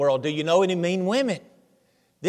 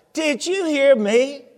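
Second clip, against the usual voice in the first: raised, louder bitter voice, higher pitch; 7 semitones higher, 3 dB louder than usual. Retelling the joke, the woman repeats the order: imitating a louder, bitter voice. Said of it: "a little bit louder".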